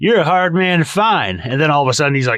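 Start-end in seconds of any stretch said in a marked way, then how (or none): 0.0-1.4 play-acted cocky, self-assured, arrogant, slightly pitched-up delivery. Retelling how Hank acts arrogant in a scene: imitating arrogant Hank. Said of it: "be arrogant".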